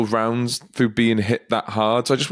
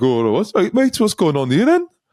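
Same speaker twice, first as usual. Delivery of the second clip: put-on drunk Geordie accent, pitched high; 7 semitones higher than usual. Retelling what a drunk onlooker asked a police officer: imitating a drunk Geordie accent. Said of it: "this really drunk Geordie came up".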